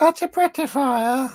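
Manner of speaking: very high, loud, borrowed copycat voice. Repeating another speaker's line as a Melanie impression. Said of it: "I could do it in a melody voice".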